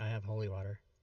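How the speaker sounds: muttered, low, soft mumble under the breath. Voicing a character walking north, mumbling under breath. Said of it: "I'm mumbling under my breath".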